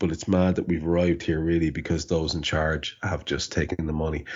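plain

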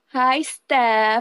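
exaggerated put-on Filipino accent. Acting out how a mother greets people when asked for an impression, in an exaggerated Filipino mom accent. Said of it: "the only example I could give because I gotta hear my mom's voice".

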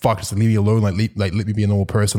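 ordinary delivery

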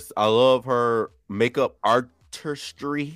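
slow, careful delivery. Asked how she feels about a contestant's look, saying it slowly. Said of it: "I had to say that slow".

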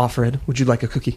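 scornful, looking-down, disdainful, grudging tone. Retelling Serena Joy offering a cookie after a pause: imitating Serena Joy's disdain. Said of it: "And so disdainful".

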